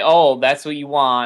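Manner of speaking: ordinary talk, nothing marked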